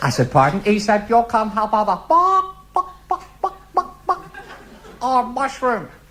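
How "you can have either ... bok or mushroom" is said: very high, slow, drawn-out chicken clucking. Speaker retelling a waiter's answer about the soup, in a chicken impression. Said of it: "why did you do an impression of a chicken".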